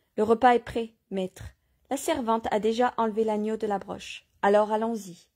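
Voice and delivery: ordinary delivery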